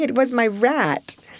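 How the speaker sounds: high-pitched, slow, said through laughter. Narrating, Sarah answers Ermengarde's frightened question about a ghost: laughing.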